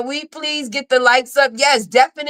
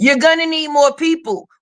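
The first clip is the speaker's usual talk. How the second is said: ordinary talk, nothing marked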